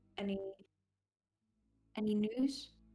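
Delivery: hushed, whispered voice. Sending a message cantrip in character every now and then: whispering.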